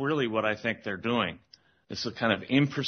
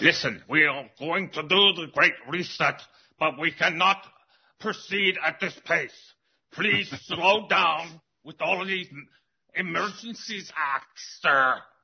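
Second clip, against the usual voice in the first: pressing, urging tone, voice pitched up; 7 semitones higher than usual. Continuing the other speaker's imagined call to Trudeau: imitating Schwab. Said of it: "So Schwab called up Trudeau, said".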